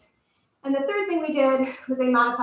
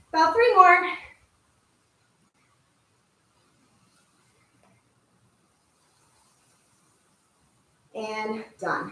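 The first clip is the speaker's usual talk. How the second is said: huffing and puffing, out of breath, slower; 3 semitones higher than usual. Leading a workout, counting down the last reps, huffing and puffing. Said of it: "I'm huffing and puffing".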